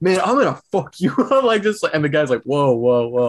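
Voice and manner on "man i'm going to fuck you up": put-on angry scream, much higher pitched. Retelling a man on a wheelchair lift threatening another guy, retelling an angry scream. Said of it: "they're both screaming at each other".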